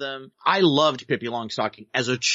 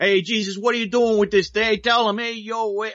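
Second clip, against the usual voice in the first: put-on New York accent, laid on heavily, pitched up; 8 semitones higher than usual. Describing a film full of New York accents, the speaker imitates Harvey Keitel's New York accent. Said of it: "Harvey Keitel is the worst offender".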